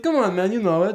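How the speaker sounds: very high put-on Eastern European accent. Riffing with friends, imitating a man in an eastern european accent. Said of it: "in his Eastern European accent".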